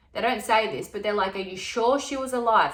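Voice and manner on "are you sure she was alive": normal talking voice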